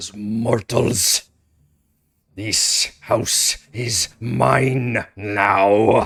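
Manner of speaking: choppy, broken, halting speech, drawn out. A game master voices a creature addressing the players, in broken language. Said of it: "in very kind of broken language".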